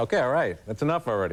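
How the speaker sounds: ordinary delivery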